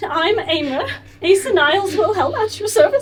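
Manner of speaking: very high, very loud, fighting back tears. Describing a bow someone did, the speaker imitates someone holding back tears. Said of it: "Like he's trying not to cry".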